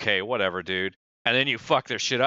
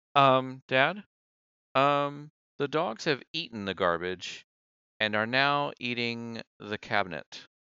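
put-on slow, drawn-out small child voice; 4 dB quieter than usual. Acting out a little kid waking a parent: little kid voice. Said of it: "they come back and go".

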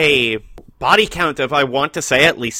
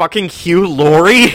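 play-acted loud, sudden, childlike screaming outburst; 3 semitones higher, 6 dB louder than usual. Retelling how a friend reacted when the opening credits started: imitating someone screaming. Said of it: "he just screamed".

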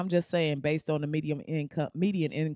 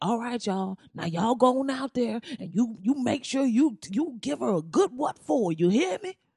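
put-on voice, pitched higher, rousing rally-style tone; 7 semitones higher than usual. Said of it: "he said it in that voice".

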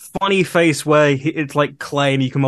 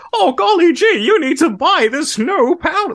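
very high, slow, drawn-out retro fifties commercial voice; 3 dB louder than usual. Imitating a character's ad read on the show: fifties ad-read voice. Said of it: "the very, like, fifties".

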